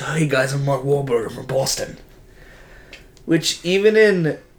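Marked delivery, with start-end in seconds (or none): 0.0-2.0 plain, normal, everyday voice. Complaining about a movie casting, imitating Mark Wahlberg. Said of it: "He's just".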